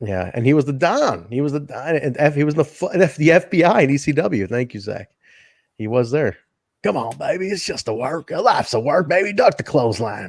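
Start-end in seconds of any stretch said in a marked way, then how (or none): 6.8-10.3 wrestler promo voice with a raspy chain-smoker sound. Imitating Tommy Rich again: Tommy Rich impression. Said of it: "I got so distracted with Tommy Rich".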